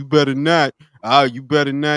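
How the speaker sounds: mock tough-guy voice. Retelling a small old man's threats: imitating someone talking tough. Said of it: "tough shit".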